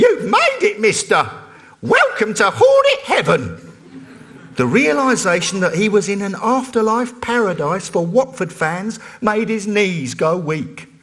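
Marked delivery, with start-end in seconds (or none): 0.0-3.7 put-on high, pure, boyish voice. Derek, a 13-year-old program assistant, greets the newly arrived man in a pure, unbroken voice. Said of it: "say in his pure, unbroken voice".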